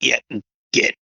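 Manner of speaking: mock, put-on grumbling. Retelling what she said as she got off the floor, retelling a grumble.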